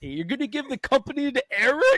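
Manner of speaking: very high-pitched voice. Quoting a favorite movie line from Billy Madison: Billy Madison quote impression. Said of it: "this one's from Billy Madison".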